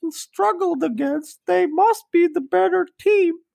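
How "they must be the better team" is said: odd put-on voice, much higher. Speaker quotes a remark in a voice that makes a listener ask about it. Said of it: "What voice is that anyway?".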